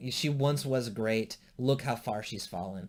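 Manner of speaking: ordinary talk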